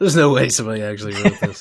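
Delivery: ordinary talk, nothing marked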